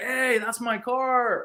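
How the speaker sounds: very high, stretched, drawn-out shout. Retelling yelling at a tow truck guy: retelling own yell. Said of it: "yelling at the guy".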